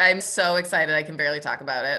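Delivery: ordinary talk, nothing marked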